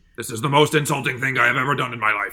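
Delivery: cartoon monkey villain voice. Attempting a Muppets voice but ending up in a Mojo Jojo voice. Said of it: "I ended up doing Mojo Jojo".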